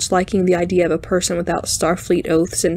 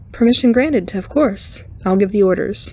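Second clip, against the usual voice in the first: plain reading voice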